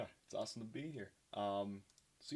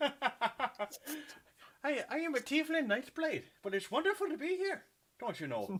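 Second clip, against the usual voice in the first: bad put-on Irish accent, very high; 6 dB louder than usual. Introducing the tiefling character to the group, speak in a bad irish accent. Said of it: "Don't at me for the bad Irish accent".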